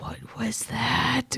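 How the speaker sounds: hushed, whispered mutter under the breath. Voicing a character grasping their head after a telepathic message: muttering quietly under breath. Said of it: "quietly under my breath".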